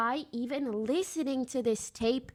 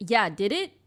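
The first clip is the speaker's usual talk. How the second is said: mock sarcastic, doubting, odd-sounding delivery; 3 semitones lower, 4 dB louder than usual. Retelling what she said in reply, imitating a sarcastic tone. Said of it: "sarcastic or weird".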